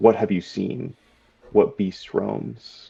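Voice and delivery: speaking in a quiet, hushed tone. Kilbalon bows his head slightly and speaks, in a hushed tone. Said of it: "in a hushed tone".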